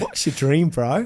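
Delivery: put-on thick New Zealand accent. Retelling meeting Fraser over a sandwich after church, speaker does Fraser's thick New Zealand accent. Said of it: "He's got this thick New Zealand accent".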